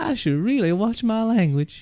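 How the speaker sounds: very high put-on Southern belle accent. Joking about watching language, in a Southern belle accent. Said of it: "not in that accent".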